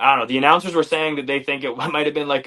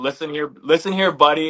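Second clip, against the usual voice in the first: ordinary talk, nothing marked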